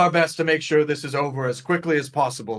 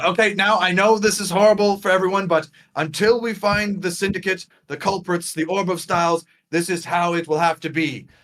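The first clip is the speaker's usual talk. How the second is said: loud, called-out voice over background chatter; 3 semitones higher than usual. Announcing the school rules while everyone is losing it, yelling over a crowd. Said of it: "as he's yelling over everybody".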